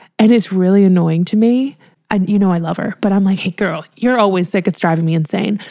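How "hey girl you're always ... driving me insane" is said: normal talking voice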